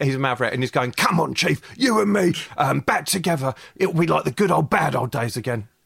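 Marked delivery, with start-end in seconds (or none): 0.9-5.6 deeply gravelly character voice. Voicing an inspector thrown off the force: gravelly voice as Porks. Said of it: "he's very gravelly".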